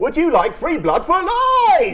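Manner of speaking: cheesiest advert voice, very high. Urging the other speaker to do the cheesiest advert, showing how: cheesiest advert voice. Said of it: "You should do the cheesiest advert possible".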